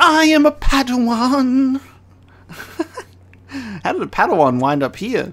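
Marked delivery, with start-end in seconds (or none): 0.0-1.8 play-acted stilted, hammy bad acting, very high, very slow. Reacting to a character's line, the speaker mocks the terrible voice acting. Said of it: "some of the most terrible voice acting I've ever heard".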